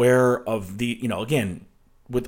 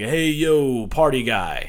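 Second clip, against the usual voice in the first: very slow, stretched-out, cheesy delivery. Mocking a man-child who thinks he's funny: imitating Hunter Biden. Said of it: "That's my impression of Hunter Biden".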